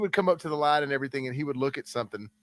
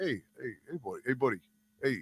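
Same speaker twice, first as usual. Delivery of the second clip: calming, easygoing, soothing voice; 4 dB quieter than usual. Retelling how a guy talked down a drunk in a bar, imitating a calming talk-down. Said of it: "could like actually sometimes talk somebody down".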